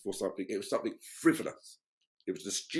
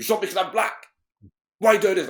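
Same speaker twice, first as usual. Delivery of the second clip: play-acted, very high, loud, shrill confrontational tone; 10 semitones higher, 11 dB louder than usual. Retelling how he usually answered police who stopped him: imitating his own confrontational tone. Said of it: "it's that confrontation".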